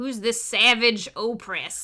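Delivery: speaking like a cowboy. Quoting a bounty hunter's line from an episode, in Sam Witwer's cowboy voice. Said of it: "says it like a cowboy".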